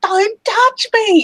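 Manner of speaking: shrill, very high-pitched feminine screech. Imitating a game character who is poked too many times: Xzar shrieking in a very feminine voice. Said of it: "he shrieks, "Don't touch me!" in a very feminine voice".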